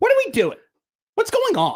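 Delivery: very high pitch with big swings. Practicing an impression to add to the repertoire: Tucker impression. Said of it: "I'm working on my Tucker".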